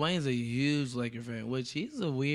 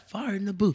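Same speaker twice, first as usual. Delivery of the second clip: put-on British accent, loud and pitched up; 6 semitones higher, 5 dB louder than usual. Answering a question about doing a British accent: put-on British accent. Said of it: "You gonna have a Briti-, British accent?".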